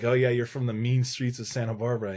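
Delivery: sarcastic, joking tone. Retelling a joke that friends make, imitating friends being sarcastic. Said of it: "kinda sarcastically".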